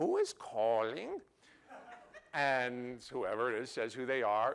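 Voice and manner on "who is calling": faked accent of an elderly Spanish woman. Retelling a man answering a phone call: put-on old Spanish lady's accent. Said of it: "putting on like an old Spanish lady's accent".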